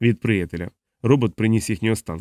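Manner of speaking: ordinary delivery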